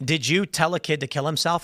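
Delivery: ordinary talk, nothing marked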